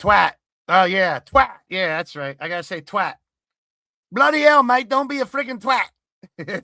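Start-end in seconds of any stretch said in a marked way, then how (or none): 4.1-6.6 higher-pitched, Australian-accented delivery. Speaker riffing about getting to say a word: Australian accent. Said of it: "it ends up going into an Australian accent".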